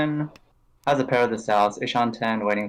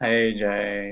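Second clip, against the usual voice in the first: depressed, glum, low tone; 2 semitones lower than usual. Greeting another speaker on joining the commentary, sounding depressed. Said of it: "you sound so depressed".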